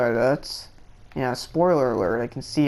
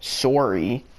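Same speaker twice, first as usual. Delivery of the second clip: the word sorry said in a Canadian accent. Showing how they pronounce the word sorry, Canadian accent on sorry. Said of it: "I know that they pronounce sorry in a different way".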